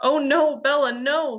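very slow, loud, high horrified cry. An angel's voice calls to Bella, crying out in horror. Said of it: "the angel's voice cried in horror".

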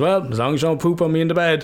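light teasing tone. Recounting a night with a bad stomach, the speaker quotes the woman in bed: retelling a joking remark. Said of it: "And jokingly".

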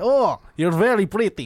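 put-on Russian accent, put on in character. Acting out a movie scene as Sam Rockwell: put-on Russian accent. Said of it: "in a Russian".

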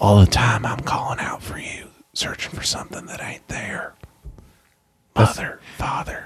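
slow, whispered, narration-like delivery. Describing a Brad Pitt movie to the others, quoting it in Brad Pitt whisper narration. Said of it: "him doing this whisper narration".

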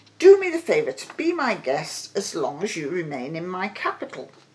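plain reading voice

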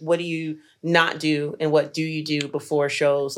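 ordinary talk

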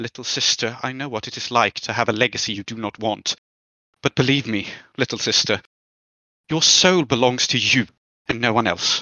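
low, intimate, emotional voice. A character speaks to her little sister alone, not to the whole room, in a low voice. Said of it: "she says in kind of a low voice to Freya alone".

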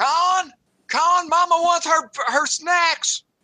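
shouting. Speaker does this for effect, calling out to Con, yelling. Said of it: "Since I'm yelling".

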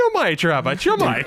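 very high, squeaky, teasing voice.

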